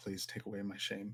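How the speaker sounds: hushed, very quiet, barely audible soft whisper. Handing a broken ukulele to Milano in character: whisper.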